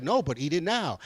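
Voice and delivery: ordinary talk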